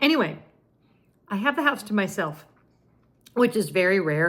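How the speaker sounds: eating and choking while speaking. Filming at night alone at home, talking while eating and choking. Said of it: "I'm choking because I'm so excited about what I'm eating".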